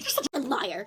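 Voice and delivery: angry, accusing schoolgirl voice. Retelling a third-grade girl calling them out: imitating an angry girl. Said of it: "I could hear the anger in her voice".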